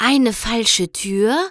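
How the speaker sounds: whispering. Twilight spots a false door between two bookshelves: whispered to herself. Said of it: "flüsterte Twilight vor sich hin".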